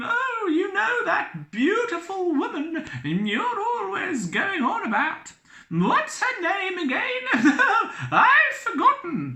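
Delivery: very high, swooping, casual, chatty, offhand falsetto. Reading a story, the figure at the door speaks to the captain in a high-pitched voice. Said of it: "said the figure in a high-pitched voice".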